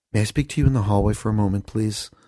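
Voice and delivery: put-on completely earnest, dead-serious tone. Retelling a kid's request in the school store: imitating someone dead serious. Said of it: "she's, like, dead serious".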